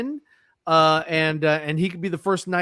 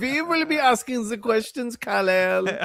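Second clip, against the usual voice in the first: put-on German accent; 5 semitones higher than usual. Imagining Brainiac questioning Kal-El, Brainiac with German accent. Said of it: "So he's got a German accent".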